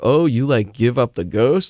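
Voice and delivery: play-acted, silly, goofy, show-off delivery. Retelling how he greeted Pat about his windbreaker, quoting himself: retelling in a silly tone. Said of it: "with kind of like a silly tone".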